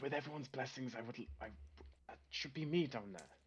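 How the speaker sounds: put-on whisper. In a roleplay, speaking in character to the people around, whispering to people nearby. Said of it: "whispering to the people around me".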